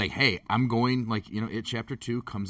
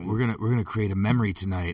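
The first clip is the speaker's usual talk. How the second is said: put-on creepy, leering voice, louder; 4 dB louder than usual. Joking with friends about the night ahead, putting on a creepy voice. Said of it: "His creepy [name]'s back".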